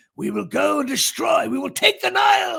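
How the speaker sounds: put-on high-pitched, shouted, grand-sounding British accent. Mocking the accents in biblical movies: british accent. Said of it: "that British accent".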